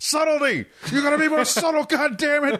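mock shrill screaming, very high in pitch. Imagine Vince in the poor commentator's ear, imitating Vince screaming. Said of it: "Vince screaming in the poor commentator's ear".

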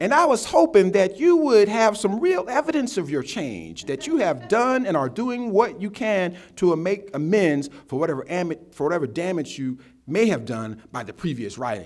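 put-on swooping Southern accent. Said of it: "I hear it with a Southern accent".

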